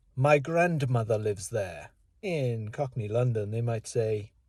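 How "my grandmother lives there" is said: put-on posh, upper-class English accent. Comparing how people in different places phrase one sentence, posh English accent. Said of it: "In posh English".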